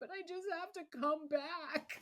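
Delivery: mock sobbing, very high and loud. Retelling a reply to the husband's suggestion to shower: imitating own past crying. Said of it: "I remember just crying and going".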